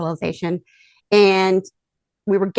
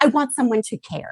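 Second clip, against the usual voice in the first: shouted voice; 4 semitones higher than usual. Recounting being asked what they wanted, retelling own yelling. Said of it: "I literally just started yelling that".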